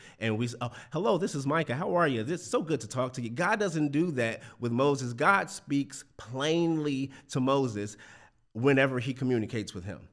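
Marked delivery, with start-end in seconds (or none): 0.6-3.3 quick, polished, put-on professional phone voice. Explaining how people code-switch, demonstrating a put-on professional voice. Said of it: "put on our professional voices".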